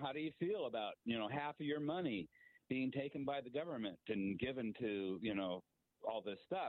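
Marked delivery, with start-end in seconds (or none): none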